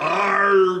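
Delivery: big, loud, bellowed pirate voice. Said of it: "The other one is a pirate".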